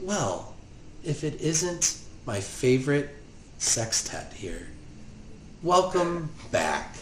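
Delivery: sweet, soft-spoken, breathy, sugary voice. A narrator voices a woman who turns around to speak, in her sweet voice. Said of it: "she says in her sweet voice".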